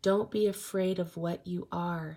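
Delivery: ordinary delivery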